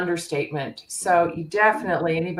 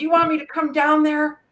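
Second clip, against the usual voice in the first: put-on screaming, very high pitch; 10 semitones higher, 3 dB louder than usual. Retelling yelling at the players on the tv: imitating own screaming. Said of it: "screaming at the players".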